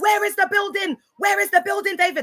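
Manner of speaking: repeated high-pitched shouting with a demanding tone. Speaker reenacts shouting a question at david on the podcast, retelling a shout. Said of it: "I'm shouting".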